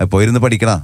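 ordinary talk, nothing marked

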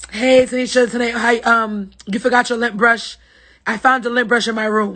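words tumbling out rapidly and nonstop. Imitating Sarah's message about a forgotten lint brush: imitating Sarah talking fast. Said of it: "Let me see if I can do Sarah".

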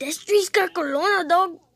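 put-on Mexican accent. Giving viewers a sample of the voice for upcoming drawing videos: Mexican voice. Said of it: "with my Mexican voice. Here's a little, sample of it".

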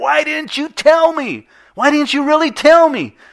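all-out shrill scream, very high and very loud. Retelling a dream where one man screams at another: imitating someone screaming. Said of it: "the guy's screaming at him".

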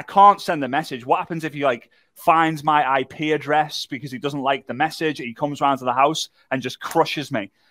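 ordinary delivery

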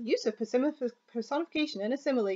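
fast, repetitive, droning examiner voice.

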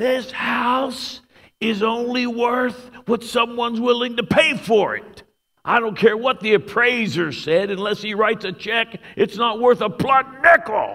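very high-pitched shout at the top of the voice. Retelling a man yelling to a room, using the speaker as his prop; retelling a yell. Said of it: "he yells at the top of his voice".

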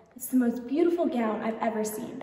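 plain

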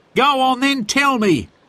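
impatient and pushing, pitched very high. Reading a story aloud, voicing Harry urging Sid to tell him: impatient. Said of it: "said Harry impatiently".

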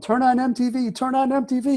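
put-on full-on high-pitched screaming, repeated. Retelling a friend's 3 a.m. phone call, retelling a scream. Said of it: "he's screaming in the phone".

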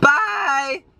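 voice breaking very high on drawn-out bye. Ending a video and showing how they say goodbye, voice cracking. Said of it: "Ew, my voice cracked".

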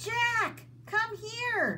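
shrill, very high-pitched calling out. Annie calls to Jack from the other side of the hill, called out. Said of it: "Annie called".

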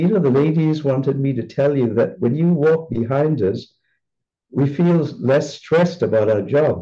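ordinary delivery

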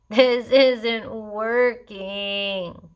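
groaned, put-upon, grumbling complaint. Kaimana, having measured himself and not grown an inch, groans. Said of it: "Kaimana groaned".

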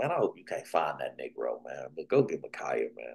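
sly, low, quiet grumbling aside.

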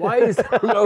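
high, loud yell, laughing.

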